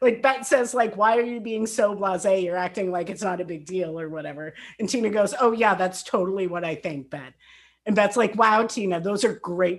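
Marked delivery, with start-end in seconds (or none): 5.4-7.3 put-on sarcastic tone. Speaker retells one person's reply to another: mock-sarcastic. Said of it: "Tina makes a comment clearly sarcastically".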